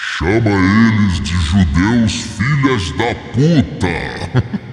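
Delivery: put-on loud, booming divine voice. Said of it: "Aí apareceu uma voz assim, ó".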